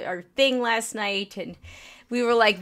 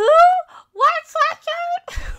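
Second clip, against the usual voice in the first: very high, loud, put-on old-lady voice; 6 dB louder than usual. Retelling own reply to the table about a sweatshirt, in a put-on old-lady voice. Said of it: "Like old lady voice".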